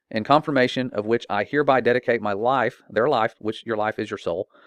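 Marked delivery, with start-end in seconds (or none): none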